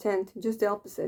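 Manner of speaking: ordinary delivery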